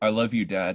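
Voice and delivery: acted toneless monotone reading, no exclamation. Mocking people who read every line without exclamation: flat monotone reading. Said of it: "There was no exclamation. There was nothing. They're like".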